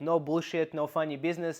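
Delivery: ordinary delivery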